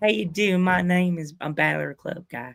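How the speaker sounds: put-on Southern accent. Imitating a friend who talks like a southern gentleman: imitating a friend's southern accent. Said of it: "he has that Southern accent".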